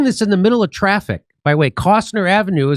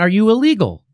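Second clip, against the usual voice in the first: normal talking voice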